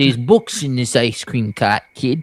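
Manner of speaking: put-on New York character accent. Playing the ice cream cart man talking to a kid: put-on New York accent. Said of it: "He's just straight from New York".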